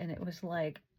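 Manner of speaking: plain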